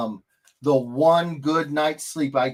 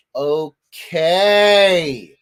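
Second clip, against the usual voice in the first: mock sassy child voice, higher and louder; 4 semitones higher, 8 dB louder than usual. Imitating a child saying okay with a lot of sass: imitating a sassy child. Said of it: "take some of the sass off".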